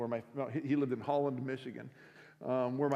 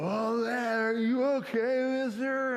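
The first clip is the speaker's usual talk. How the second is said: put-on very high, drawn-out, slurred drunk voice; 10 semitones higher, 5 dB louder than usual. Retelling a drunk driver asking the injured man: imitating drunk slurred speech. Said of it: "reeking of alcohol, slurring his words".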